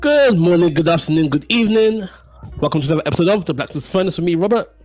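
talking loudly. Opening the episode with a greeting and welcome, talking loud. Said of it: "why are you talking so loud".

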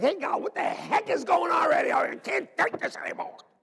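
very high, fed-up, exasperated outcry.

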